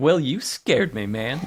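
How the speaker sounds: mock-smug put-on voice. Recapping a scene, the speaker acts out Jeff's reply: imitating Jeff's smug delivery. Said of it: "It's real smug".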